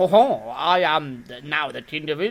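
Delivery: haughty, lofty, grand royal voice. Telling how the king acts when he sees you and your friend, in a haughty King Charles voice. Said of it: "he's got that haughty voice".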